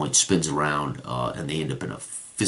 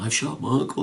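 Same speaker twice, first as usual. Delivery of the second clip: mock-crying boy voice, much higher; 9 semitones higher than usual. Retelling a game session, the speaker acts out the boy's line, imitating crying. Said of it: "And he's crying".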